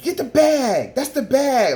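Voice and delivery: very high, drawn-out, belittling yell. Retelling how she yelled at the speaker in front of everybody, retelling a yell. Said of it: "yelled at me in front of everybody".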